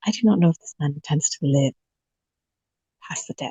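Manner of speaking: secretive, hushed, soft whisper. Speaking in character to another player at close range, whispering. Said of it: "I'm trying to, like, whisper".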